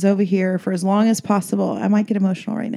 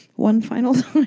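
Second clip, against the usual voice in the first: normal talking voice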